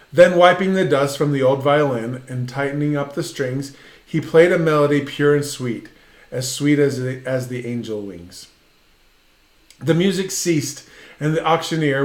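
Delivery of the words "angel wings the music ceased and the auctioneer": ordinary talk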